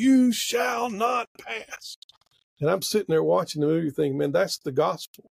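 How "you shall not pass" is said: high, very slow, screamed-out delivery. Retelling a movie scene, retelling Gandalf's scream. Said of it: "he just screams out".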